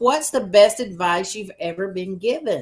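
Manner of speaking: ordinary talk, nothing marked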